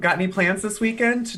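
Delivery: put-on loud voice. Speaker retelling what they loudly said to two others in a story: retelling a loud remark. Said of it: "I loudly then say".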